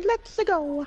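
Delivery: high-pitched, cartoonish video game hero voice. Playing a game with friends, the speaker does a Mario impression. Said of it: "That was the best Mario impression I've ever heard today".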